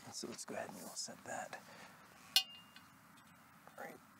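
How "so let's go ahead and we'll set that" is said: much quieter, softer and lower voice. Setting a back post at its mark, speaking quietly.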